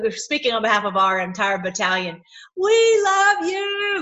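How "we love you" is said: very high, very loud, full-throated scream. Retelling what was screamed at him at a rally: retelling own scream. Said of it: "I'm screaming at him and saying".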